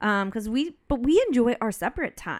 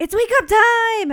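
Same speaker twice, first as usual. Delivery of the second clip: put-on very high, shrill, full-volume child's yell; 11 semitones higher, 8 dB louder than usual. Retelling how Olivia gets in your face in the morning, imitating Olivia yelling. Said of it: "as loud as she can".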